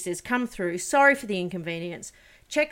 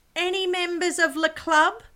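screeching, very high, drawn-out scream; 11 semitones higher, 3 dB louder than usual. Retelling a hotel queue, imitating a receptionist screaming out. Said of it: "she screams out".

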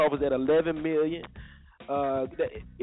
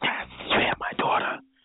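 put-on movie-style whisper. Complaining about the movie Taken, the speaker mimics its whispering lead: Taken-style whisper. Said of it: "that damn whispering".

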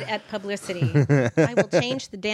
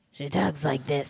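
lifelong smoker's rough cigarette voice; 7 semitones lower, 4 dB quieter than usual. Imitating how the show's main mom talks, smoking-for-years voice. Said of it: "Smoking for years voice".

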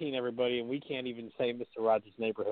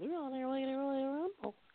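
put-on old woman puppet voice, higher and quieter; 7 dB quieter than usual. Commenting on a Royal Rumble promo, sounding like the old woman puppet from Mister Rogers' Neighborhood. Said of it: "You just sounded like, uh, the old woman puppet".

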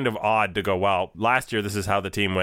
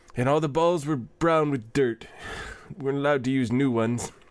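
put-on creaky, pitched-up old man voice; 6 semitones higher than usual. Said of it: "Nice voice you got going there".

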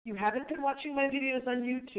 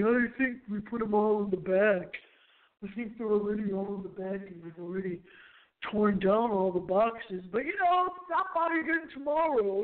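put-on deep, dropped man's voice. Quoting a guy who was asked for boxes, in a put-on man's voice. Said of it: "That's my man's voice".

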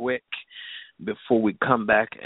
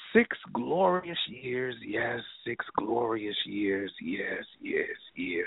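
soft, slow, drawn-out, slightly creepy voice; 6 dB quieter than usual. Celebrating six years of the show on air: a little creepy voice. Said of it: "I know I sound a little creepy right now".

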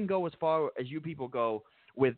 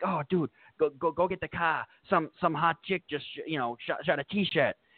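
very bad, fake, put-on Boston accent. Acting out someone who just caught a t-shirt, bad boston accent. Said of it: "I'm gonna try my worst Boston accent here".

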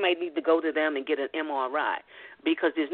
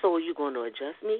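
kept down in a low tone. Retelling a question put to him in an office full of patients, low tone. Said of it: "in low tone".

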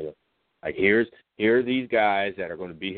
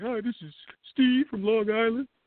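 very high, goofy, silly, fake-sounding voice. Imitating how a friend introduces himself on calls: Josh's stupid-ass voice. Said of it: "he does that stupid-ass voice".

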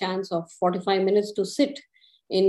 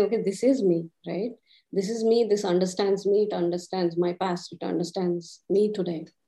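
ordinary talk

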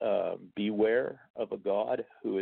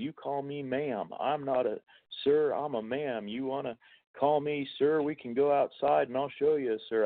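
put-on male yelling, pitched up, combative, ranting; 5 semitones higher than usual. Retelling a video of a belligerent man at a store, imitating a man yelling. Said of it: "he's yelling at the top of his lungs".

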